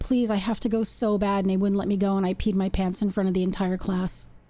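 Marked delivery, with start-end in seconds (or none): 0.0-1.4 put-on tearful, crying voice. Retelling begging the teacher to go to the bathroom: imitating own crying plea. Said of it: "I was crying and I was like".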